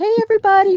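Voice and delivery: loud, very high call-out. Describing a mustached man ringing a bell, the speaker quotes him: imitating a man's greeting. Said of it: "he'd be like".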